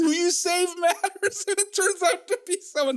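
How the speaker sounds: talking through giggles, very high-pitched. Explaining a philosophy example about saving a drowning child, laughing while talking. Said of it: "I don't know why I'm laughing".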